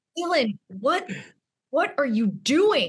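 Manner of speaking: put-on furious man voice. Retelling how the bouncer confronted the speaker: imitating a livid man. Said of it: "another man is livid with me".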